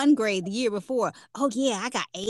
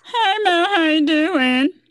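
very loud, high puppet-character voice; 7 semitones higher, 9 dB louder than usual. Podcast host greeting her co-host Mel, Sesame Street character voice. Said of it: "Why'd I just sound like a Sesame Street character?".

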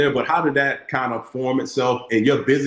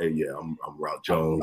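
very low, grave, dead-serious deep voice; 9 semitones lower, 8 dB quieter than usual. Imitating how a co-host sounds on the show: imitating Rock Jones's serious voice. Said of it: "he seems like the most serious dude in the wor-".

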